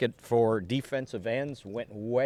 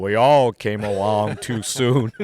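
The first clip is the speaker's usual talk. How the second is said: deep, booming voice, drawn out slowly; 9 dB louder than usual. Retelling what Pat Summerall said at a lunch: Pat Summerall deep voice. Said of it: "Summerall in his deep voice goes".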